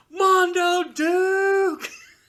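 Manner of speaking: very high, very loud, shrill scream, one word held long. Retelling a car cutting in while driving: retelling a scream. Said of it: "those two words he screamed out".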